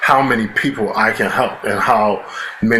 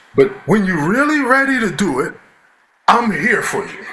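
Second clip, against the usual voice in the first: very high, heartfelt, put-on Italian voice; 10 semitones higher than usual. Retell what a man you miss said to Brian, in a put-on heartfelt Italian voice. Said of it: "in his most Italian, uh, heartfelt".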